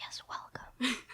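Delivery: mock ASMR whisper. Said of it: "this is an A S M R".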